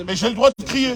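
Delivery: ordinary delivery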